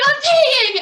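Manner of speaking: very high, loud, terrified, scared shriek. Retelling a scared kid in the back seat: imitating a scared kid screaming. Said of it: "he's so scared, and he's screaming".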